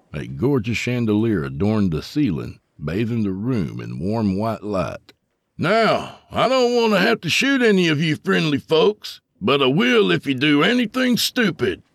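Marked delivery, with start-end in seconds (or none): 5.6-11.8 hard, loud, stern, very high-pitched delivery. Reading a story aloud, a gunman warning shoppers: loud, stern voice. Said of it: "He spoke in a loud, stern voice".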